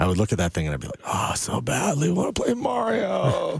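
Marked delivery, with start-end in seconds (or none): 1.0-3.6 mock old, wheezy voice, higher. Retelling a childhood wish to play an arcade game: imitating own old wheezy voice. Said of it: "I talked like an old wheezy emphysemic".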